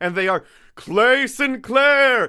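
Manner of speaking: very high, drawn-out TV announcer voice. Host reading out the supporters' names: SNL announcer voice. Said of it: "That's my SNL voice".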